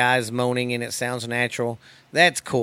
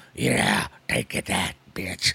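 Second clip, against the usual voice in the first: ape-like voice, lower; 5 semitones lower than usual. Mocking guys on there who sound like big hairy apes; big hairy ape voice. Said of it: "sound like a fucking i don't know just like a Big hairy apes".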